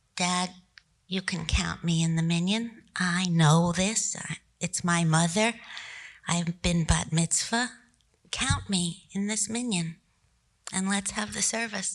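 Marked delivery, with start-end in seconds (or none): none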